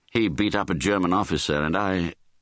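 ordinary delivery

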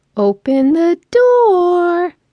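put-on very high, squeaky baby talk voice. Narrator, stuck with the dogs, asks them to open the door, high-pitched pet-and-baby voice. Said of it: "I squeaked in that high-pitched voice we use for pets and babies".

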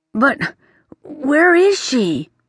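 trembling, quavering, shaking, unsteady voice. Narrator reading a prince's line in a story, voice shaking. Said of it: "His voice was shaking".

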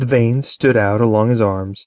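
ordinary delivery, nothing marked

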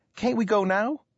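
keen, eager, very high voice. Young Abe asks his father, who is busy planting a field; eager. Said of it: "Abe asked eagerly".

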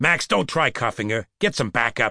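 ordinary delivery

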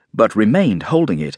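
ordinary delivery

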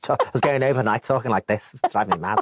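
put-on Liverpool accent. Telling hosts about recording Paul O'Grady's autobiographies, in a Paul O'Grady impression. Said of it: "Not in that accent".

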